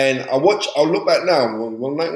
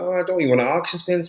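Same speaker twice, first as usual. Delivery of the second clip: put-on Irish accent; 3 semitones higher, 4 dB quieter than usual. Retelling how Bobby asked for a favour, imitating Bobby in an Irish accent. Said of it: "What kind of Irish accent was that?".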